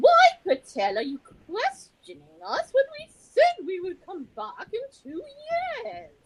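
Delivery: put-on very high, very loud, booming British accent. Imagining what the QED guys would say to Patel, English accent. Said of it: "they would have said it in an English accent".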